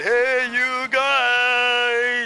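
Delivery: high, loud, goofy screaming.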